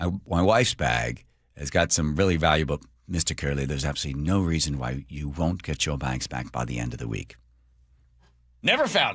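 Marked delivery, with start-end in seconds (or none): 3.1-7.4 put-on English accent, much lower and quieter. Quoting what the lady said to them, in an English accent. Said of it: "the lady with the English accent".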